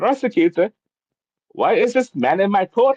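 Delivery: put-on Indian accent, pitched very high. Speaker retells the judge questioning the prosecutor about him, Indian accent. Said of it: "with the accent, Indian accent".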